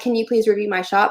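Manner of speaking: ordinary talk, nothing marked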